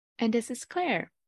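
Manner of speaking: very quiet, composed, understated tone. Introducing yourself after Becky's energetic hello: very quiet and composed. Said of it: "You say it so silently".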